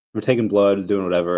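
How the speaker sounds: ordinary talk, nothing marked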